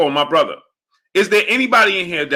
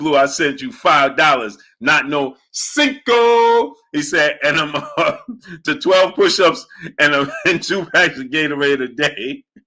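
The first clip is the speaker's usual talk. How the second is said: usual speaking voice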